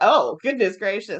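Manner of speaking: ordinary delivery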